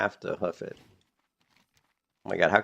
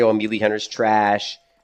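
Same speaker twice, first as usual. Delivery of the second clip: ordinary talk, nothing marked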